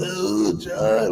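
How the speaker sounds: mock excited, worked-up hype-man cheering. Retelling coworkers cheering on a friend: imitating coworkers hyping someone up. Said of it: "they gassing and shit, going crazy".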